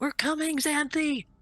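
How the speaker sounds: high, shouted call. Calling through a door to an ally in the fight: shouting a call. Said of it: "I'll shout out".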